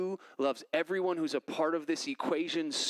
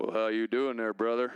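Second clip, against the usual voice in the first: put-on, laid-on Louisiana man's accent; 6 semitones lower than usual. Explaining how the speaker quotes a man from Louisiana; put-on Louisiana accent. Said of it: "I have to inflect his voice".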